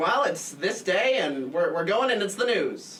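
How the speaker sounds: put-on slow, loud mid-Atlantic accent.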